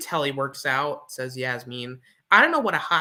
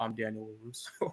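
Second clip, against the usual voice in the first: very quiet, low, hushed, flat monotone drone; 4 semitones lower, 13 dB quieter than usual. Imitating how he introduces himself, in a quiet flat monotone. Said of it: "such a monotone voice. He's so quiet".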